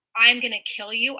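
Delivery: plain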